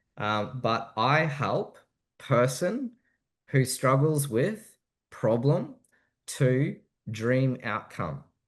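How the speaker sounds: slow, deliberate, halting speech broken into chunks. Teaching a hook framework so listeners can write it down, said slowly. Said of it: "I'll say this slowly".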